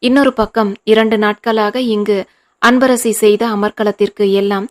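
plain reading voice

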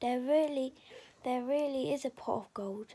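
ordinary delivery

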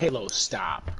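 firm, commanding voice of authority. Telling Halo to stop changing the TV: authoritative voice. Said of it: "You have an authoritative voice".

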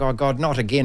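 usual speaking voice

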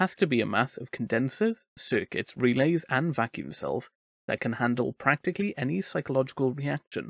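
ordinary delivery

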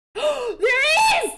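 sudden high, loud, startled scream.

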